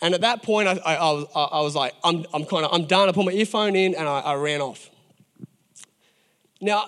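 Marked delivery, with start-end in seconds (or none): none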